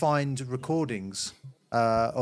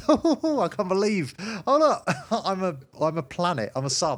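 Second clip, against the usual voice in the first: put-on giggling, higher pitch; 6 semitones higher, 5 dB louder than usual. Recalling figuring things out, speaker acts out their past self: retelling own giggling. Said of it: "just sort of giggling".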